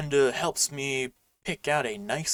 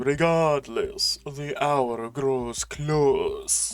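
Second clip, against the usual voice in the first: put-on vampire voice. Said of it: "give him, like, a Dracula voice".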